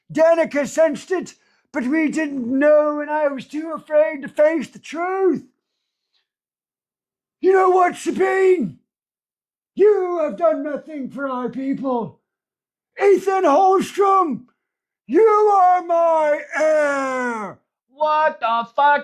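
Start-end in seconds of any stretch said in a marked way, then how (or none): 0.1-17.6 higher fake British accent. Retelling a story, voicing the Prime: put-on British accent. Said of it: "I'm gonna make him British".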